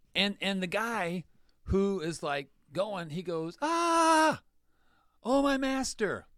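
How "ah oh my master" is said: very high, slow, drawn-out, distressed acted "ah". Retelling how a man cries out after losing an axe head: imitating an upset man. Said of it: "Why do you think that he was so upset?".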